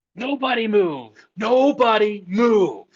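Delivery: commanding, projected voice, very high. Kicking open the door with an electric arc in hand: projected shout. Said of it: "start and yell out".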